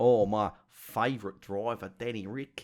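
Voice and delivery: put-on Australian accent. Asked about a favourite driver, the speaker answers in an Australian accent. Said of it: "Is that Australian accent?".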